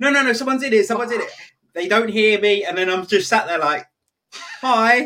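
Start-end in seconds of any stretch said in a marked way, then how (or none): 0.0-1.3 re-enacted shout, much higher. Recalling hearing a key in the toilet door while sat inside, retelling a shout. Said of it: "I'm shouting like".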